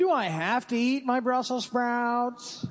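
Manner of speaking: put-on nerdy character voice. Telling holiday-themed bad jokes to a group, delivering one in your best Urkel voice. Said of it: "In my best Urkel voice".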